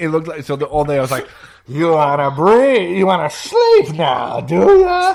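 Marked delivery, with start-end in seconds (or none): 1.7-5.1 supervillain voice, high, with pitch swooping and swinging. Retelling teasing a partner with a sleep mask: Bane voice. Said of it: "it sounded like Bane".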